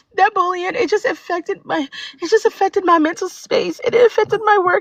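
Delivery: tearful voice, crying, holding back tears. Recounting a hard experience to others, crying. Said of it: "I'm trying not to cry, but tears is coming down".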